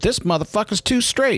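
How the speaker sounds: put-on Atlanta accent, very high. Quoting a man from murder's row, in the Atlanta voice. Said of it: "That was like the Atlanta voice you do".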